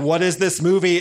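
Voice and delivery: ordinary talk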